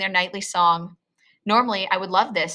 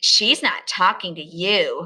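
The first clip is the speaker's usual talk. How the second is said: snotty, snooty, stuck-up, superior tone. Reading a story: Elizabeth answers the narrator, who spoke to Sarah, in a snotty tone. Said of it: "replies in a snotty tone".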